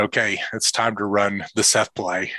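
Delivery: plain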